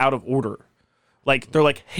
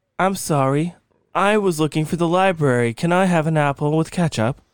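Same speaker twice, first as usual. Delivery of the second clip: faux British accent, played straight; 2 semitones higher than usual. Acting out a figure knocking at a doorstep, the speaker slips into a British accent. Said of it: "you just went British with it".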